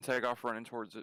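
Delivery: ordinary talk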